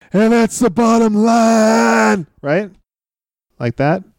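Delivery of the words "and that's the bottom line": bad, slow delivery with the line drawn out. Trying out a new impression for a co-host: Stone Cold voice. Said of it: "It's really terrible".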